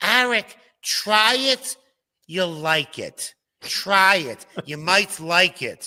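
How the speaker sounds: put-on grandmother voice, high and slow. Quoting what she always said when he looked at her cooking: grandmother impression. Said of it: "I'll say it in her voice".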